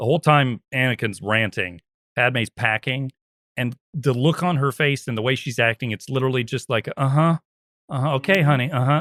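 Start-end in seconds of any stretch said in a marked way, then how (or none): 7.0-9.0 dismissive, disinterested, half-listening tone. Describing how Padme acts while Anakin rants: imitating Padme barely listening. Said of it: "just barely listening".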